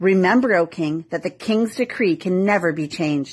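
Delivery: plain reading voice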